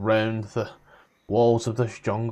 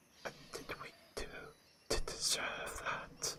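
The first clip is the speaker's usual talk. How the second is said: faint, barely there near-whisper. Voicing a faint voice heard in a player's left ear: faint voice, almost a whisper. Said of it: "almost whisper in your left ear".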